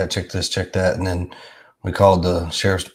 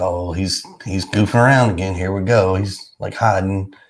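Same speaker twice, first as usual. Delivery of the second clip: plain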